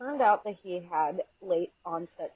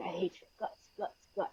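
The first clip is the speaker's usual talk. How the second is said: whispered, breathy, guttural animal-like growl low in throat; 8 dB quieter than usual. Retelling a parent's rage episode: imitating a guttural growling voice. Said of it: "his voice would drop into this weird guttural noise".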